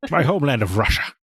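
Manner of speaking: put-on Scottish brogue. Joining in on the movie's Russian captain: Sean Connery impression. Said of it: "he talks like that".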